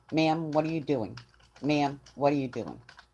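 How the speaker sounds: plain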